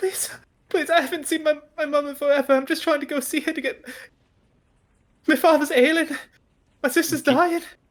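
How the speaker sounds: put-on sobbing child's voice, pitched very high, tearful. A boy without his ticket begs the train conductor, crying while pleading. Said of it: "falls to his knees crying".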